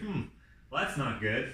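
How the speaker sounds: ordinary delivery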